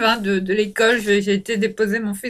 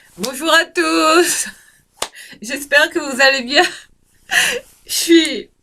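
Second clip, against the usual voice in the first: helpless, high, giggly laughing fit; 5 semitones higher than usual. A speaker greets the audience while caught in a laughing fit. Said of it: "Excusez-moi pour ce fou rire".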